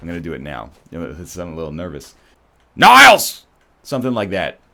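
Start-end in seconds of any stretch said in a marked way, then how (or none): 2.8-3.5 shrill, very high, very loud put-on voice. Trying out an impression for another speaker to rate: Frasier Crane impression. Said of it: "my Fraser Crane impression".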